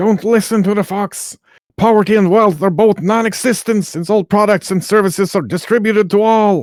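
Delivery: very high, fast, shrieking hag voice. A game master voices a hag who sheds her skin, screaming. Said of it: "The hag sheds her skin, screams".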